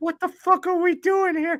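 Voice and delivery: put-on very high-pitched, heavy, thick Boston accent. Retelling a guy cracking up while reading a Sherry's Berries ad, in a thick Boston accent. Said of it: "thick Boston accent".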